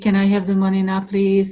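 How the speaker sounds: flat monotone, no energy. Showing how a question can be asked without energy, in flat monotone. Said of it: "There is no energy uh, in this uh, question".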